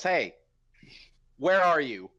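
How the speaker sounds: magically booming, ringing, resounding call. Calling out magically amplified through a house: magically booming voice. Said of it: "thaumaturgy my voice so it can be".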